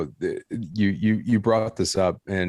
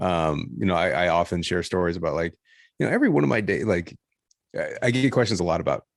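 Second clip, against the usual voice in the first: plain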